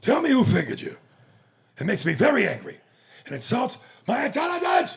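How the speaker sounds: booming, swooping, very high, loud yell all over the place. Quoting a film scene to another speaker: Al Pacino impression. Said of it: "Al Pacino".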